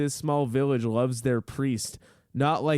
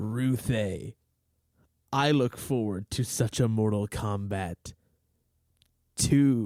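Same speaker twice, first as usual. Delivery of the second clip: put-on deep, forced low, very slow voice; 4 semitones lower than usual. Reading a book aloud, giving the character's line in a deep Shao Kahn voice. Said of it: "I had a hard time saying that in a deep voice because I was smiling".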